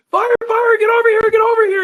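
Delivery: play-acted desperate scream, very high and loud. Recounting a car fire, calling a slow-moving man over, retelling a scream. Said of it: "I'm screaming".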